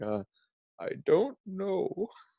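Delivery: stumped, drawn-out, swooping. Retelling how Homer, posing as Mister Burns, cannot answer: imitating Homer as a stumped fake Mister Burns. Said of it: "he's just like".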